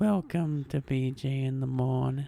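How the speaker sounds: eerie put-on cartoonish voice. Repeating the show's welcome line when asked: Salad Fingers voice. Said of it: "You sound like Salad Fingers".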